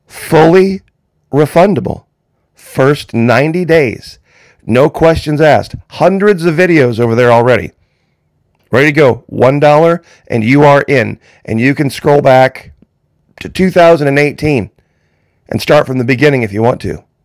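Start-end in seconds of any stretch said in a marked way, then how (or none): 0.1-5.7 slow, unhurried, measured, deliberate delivery. Repeating an offer to viewers a second time, slower. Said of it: "Let me say that again slower".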